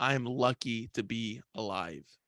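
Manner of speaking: put-on straight-faced delivery. Recounting what was said after leaving the hospital, retelling a deadpan line. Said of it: "straight straight face".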